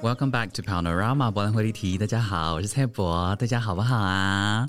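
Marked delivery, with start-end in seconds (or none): 3.4-4.7 ingratiating, fawning, very slow, drawn-out sweet tone. Greeting listeners at the start of the show, fawning tone. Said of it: "干嘛这么谄媚的语气啊".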